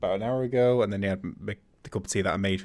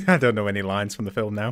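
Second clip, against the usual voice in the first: usual speaking voice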